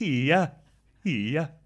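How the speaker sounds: Swedish-sounding hiya. Trying out a martial arts shout: Swedish-sounding hiya. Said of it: "that is kind of Swedish".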